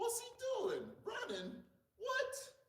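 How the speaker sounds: bewildered cartoon worker voices. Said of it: "the legs is all like".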